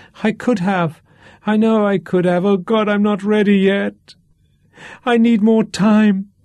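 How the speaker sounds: piercing, shrill voice. Narrator reading a character's words as his voice rises, shrill voice. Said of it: "His voice was shrill".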